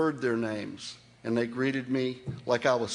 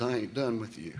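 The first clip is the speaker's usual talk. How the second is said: put-on whisper, slower; 2 semitones lower, 5 dB quieter than usual. Retelling the words of a man who could only whisper: retelling a whisper. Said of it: "all he could do was whisper".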